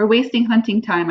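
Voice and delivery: plain reading voice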